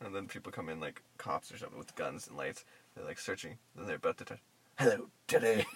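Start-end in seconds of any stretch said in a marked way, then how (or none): 4.8-5.7 eerie creepy horror voice, lower. Acting out a line from an imagined horror scene: creepy horror voice. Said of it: "It would be so creepy".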